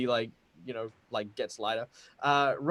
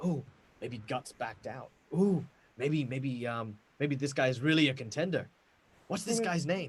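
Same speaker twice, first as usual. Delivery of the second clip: hushed whispering voices; 3 dB quieter than usual. Voicing diners gossiping about a contender: whispering diners. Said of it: "People are kinda whispering".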